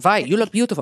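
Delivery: put-on German accent. Retelling a story, quoting what a man said to the speaker, in a German accent. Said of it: "I could just convince myself I'm German".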